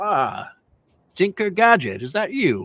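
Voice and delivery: put-on speaking in an old man's voice. Narrating a role-played phone call, the speaker voices the caller: Ebenezer's old man voice. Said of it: "you hear an old man's voice".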